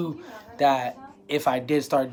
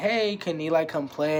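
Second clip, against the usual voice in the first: put-on sweet, cutest tiny little child voice; 2 semitones higher than usual. Retelling a girl asking whether eli can come play, cutest little voice. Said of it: "in the cutest little voice too".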